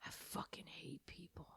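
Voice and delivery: hushed, whispered grumble under the breath. Describing a habit at the drive-through when inconvenienced: whispering under breath. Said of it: "constantly whispering under my breath".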